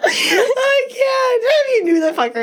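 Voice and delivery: very high half-shout, talking through laughter. Answering the other speaker's plea to pull it together, laughing while talking. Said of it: "Pull it together".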